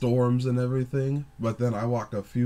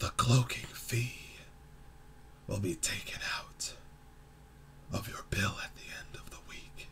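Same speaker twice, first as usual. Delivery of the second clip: very quiet, hushed, raspy near-whisper; 11 dB quieter than usual. Retelling the only words a strange man said, in a raspy voice. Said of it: "like in this raspy voice".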